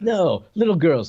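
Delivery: slow, swooping sing-song in a fixed rhythm. Quoting Chino's line about how he talks: Chino's same-cadence delivery. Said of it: "that's what he's like".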